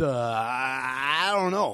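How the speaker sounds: very slow, dragged-out drawl with stretched I. Doing an impersonation of Eric when set up with a question: impersonating Eric. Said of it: "That's pretty good".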